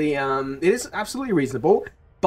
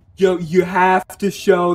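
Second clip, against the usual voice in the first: very slow, annoying put-on American drawl. Quoting a passive-aggressive man demanding to see the student proof, put-on american accent. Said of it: "I'm giving him an American accent".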